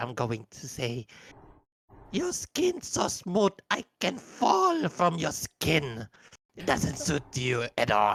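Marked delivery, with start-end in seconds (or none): 2.1-8.2 yelling in character, higher and louder. Voicing a character who shouts an insult from the table: in-character shout. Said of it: "Nikakin's going to shout onto the, uh, Frederick".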